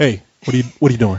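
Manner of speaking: put-on monotone tough-guy voice. Joking about a door alarm that catches intruders: Chuck Norris voice. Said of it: "That should be his voice".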